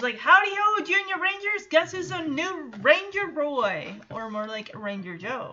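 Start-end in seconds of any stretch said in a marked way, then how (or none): 0.2-3.9 mock thrilled, excited, pitched-up voice. Retelling how Joey greets the Junior Rangers: imitating excited Joey. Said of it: "he's excited".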